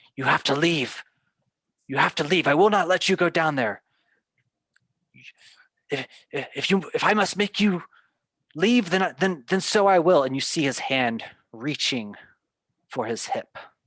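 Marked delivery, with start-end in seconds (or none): 0.2-10.2 high, loud yelling. Voicing a frail man who grabs a player's arm: character yelling at the player. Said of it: "he just starts yelling at you".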